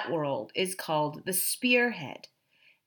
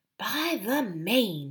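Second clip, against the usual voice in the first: whispered; 3 semitones higher, 5 dB quieter than usual. Astonished at how silently the girl leads, he whispers to Eustace: whispered. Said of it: "he whispered to Eustace".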